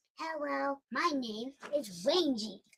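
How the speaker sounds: snuggly, high, slow little teddy bear voice. Speaking as a teddy bear named Rangy, greeting: voicing a teddy bear. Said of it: "little snuggly bear".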